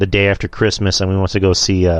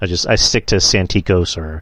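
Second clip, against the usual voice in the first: ordinary delivery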